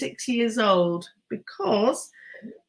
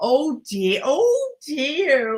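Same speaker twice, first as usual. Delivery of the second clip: put-on slow West Country accent; 4 semitones higher than usual. Recalling something terrifying they saw, the speaker imitates Kelly's West Country accent. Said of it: "Kelly in a West Country accent going".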